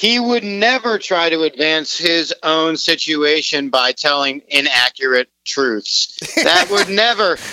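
sarcastic, mocking tone, slowed down. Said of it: "I hope that my sarcasm came through".

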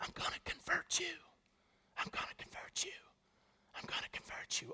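very quiet, hushed, barely voiced repeated whisper. Retelling how someone behind them whispered during map training: imitating someone whispering. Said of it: "and he's whispering".

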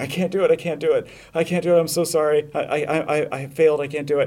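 slow, play-acted crying, falling-apart tearful hysteria. Retelling a film scene where a mother lowers her gun: imitating hysterical crying. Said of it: "crying and".

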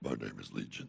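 eerie, frightening, very hushed whisper. Acting out the possessed man's reply to Jesus: scary voice. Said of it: "I just freaked y'all out".

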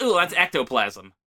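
ordinary talk, nothing marked

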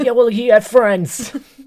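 very high, loud, shrill, booming talking-dog voice. Retelling a movie scene where wolves talk to each other: dog impression. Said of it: "It's a good impression of the dog".

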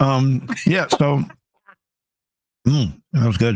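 chewing while getting words out, mouth full. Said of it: "As I eat".

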